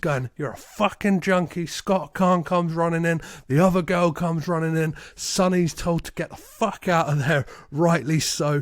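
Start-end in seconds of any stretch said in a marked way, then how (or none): none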